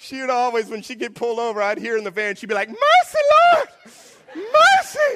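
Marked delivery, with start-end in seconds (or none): 2.7-5.2 very high, very loud, desperate pleading cry. Retelling grandma pulled over in the van: imitating grandma crying out. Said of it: "the Lord hears her cries".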